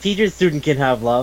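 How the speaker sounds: plain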